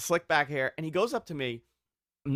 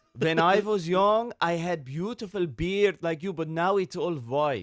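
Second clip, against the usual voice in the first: put-on, fake-sounding Persian accent; 2 semitones higher than usual. Retelling what a man said about his own beard, imitating a persian accent. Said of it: "I do a very good Persian".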